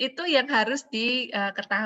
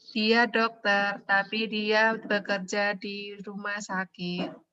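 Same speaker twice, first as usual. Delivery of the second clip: level, flat, machine-like robotic monotone. Contrasting robot speech with human intonation: flat robotic monotone. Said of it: "Itu flat, itu robot".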